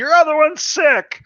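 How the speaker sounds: put-on high, loud little child voice.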